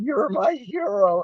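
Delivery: high, soft voice, breaking and cracking. Retelling what a young woman in costume said to him, imitating a cracking voice. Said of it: "her voice is cracking".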